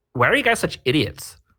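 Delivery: snide, mocking, high know-it-all tone. Discussing a character, doing a mocking impression of her lines. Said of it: "let me do my impression of of basically every one of her lines".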